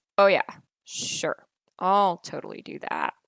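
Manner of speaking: insincere, sarcastic, swooping sing-song tone. Explaining how tone changes meaning, repeating the same phrase in a sarcastic tone. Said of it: "The other one says that the person really probably isn't going to do the thing".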